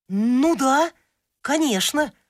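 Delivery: delighted. Reading a tale: the puppy answers the cat's teasing suggestion, delighted. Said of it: "обрадовался щенок".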